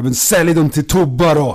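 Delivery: furious angry shout. Retelling how he got angry over a price and yelled, retelling an angry shout. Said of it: "blev han arg och så här skrek att ja".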